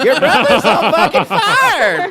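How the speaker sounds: panicked, high, loud, slow shriek.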